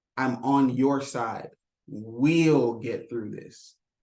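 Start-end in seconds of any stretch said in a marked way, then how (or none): 1.8-3.7 heavy stress on the word "we'll". Explaining how to offer someone hope: stress on "we'll". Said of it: "I put emphasis on the we".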